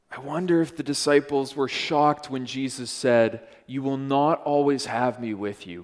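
plain reading voice

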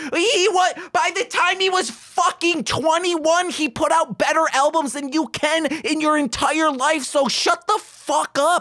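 shrill, very high, furious angry rant. Defending an artist's early albums against people who doubt him, angry rant. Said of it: "I am very angry right now".

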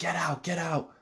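screaming at high pitch. Retelling surveillance footage of a kid at a neighbor's door: imitating someone screaming. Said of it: "he's screaming at the person. He's like".

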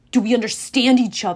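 said with a growl. Narrator reads the steam figure's question after he raises his fist: growled. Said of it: "Ares growled".

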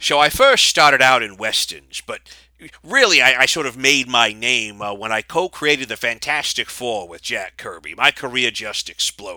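storyteller-style narrating voice. Doing a combined impression for others to guess: Stan Lee impression. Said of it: "imitation of, of what sounds like Stan Lee".

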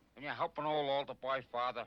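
put-on old man's voice. Retelling how a girl asks Father Damien for help, in an old homeless man's voice. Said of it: "in that old homeless man's voice".

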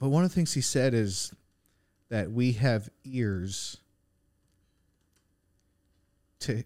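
tearful, speaking through tears, crying through words. A speaker on a podcast recalls a preacher's sermon, crying while speaking. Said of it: "I don't know why I'm crying on this podcast".

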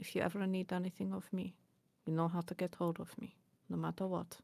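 hushed, very quiet, barely-there half-whisper. Voicing a character saying farewell to her partner: half-whispering very quietly. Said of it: "very quietly, she'll whisper".

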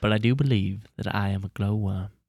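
mock elderly British statesman voice. Doing an accent on request, quoting Winston Churchill: Winston Churchill impression. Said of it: "That was a perfect Churchill".

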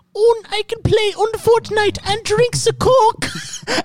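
put-on very high, slow little German boy voice. Acting out a boy whose mum lets him play Fortnite, in a little German boy's accent. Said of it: "in this little German boy's accent".

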